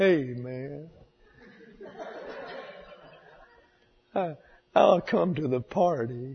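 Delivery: slow, leisurely, stretched-out, drawn-out manner. Telling of a man at the door at midnight, imitating his grinning voice. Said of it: "grinning, talking like this".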